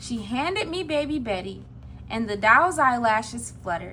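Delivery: plain reading voice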